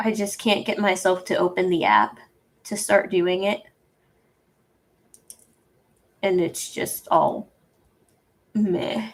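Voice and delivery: tearful, crying voice. Admitting to being unable to start on ideas, crying. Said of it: "Sorry for crying".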